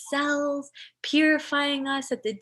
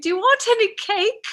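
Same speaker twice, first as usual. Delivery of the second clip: put-on British old woman accent, pitched up; 9 semitones higher, 6 dB louder than usual. Retelling what the speaker's grandmother would ask, imitating grandmother's british accent. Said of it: "my grandmother was also speaking in the British accent".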